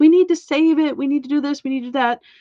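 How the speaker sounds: insistent, urgent pleading tone. Telling a story, speaker imitates what she said: mock urgent pleading. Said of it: "and she's like".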